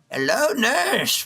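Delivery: high anime-style character voice. Doing a cartoon character's line after another: Master Roshi voice. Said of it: "and then Master Roshi".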